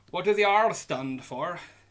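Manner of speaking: accent drifting a bit Irish. Reading a quiz question, the speaker tries a pirate r that goes a bit irish. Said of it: "it's went a bit Irish there".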